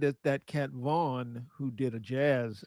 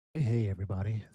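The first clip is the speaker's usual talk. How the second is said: low, easy late-night radio DJ voice; 4 semitones lower than usual.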